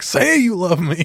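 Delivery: slow, deliberate, drawn-out delivery. Retelling parents after scaring a kid: imitating a parent. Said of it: "they're like".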